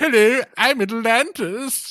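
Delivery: very high, loud, dopey dumb guy voice. Imagining Plato telling the Atlantis story, giving Atlantis a dumb guy voice. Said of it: "Atlantis was getting the dumb the dumb guy voice".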